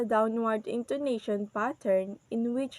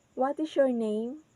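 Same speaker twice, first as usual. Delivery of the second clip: falling intonation on name; 2 semitones higher than usual. Demonstrating falling intonation with an example question: falling intonation on name. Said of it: "the falling intonation here is in the word name".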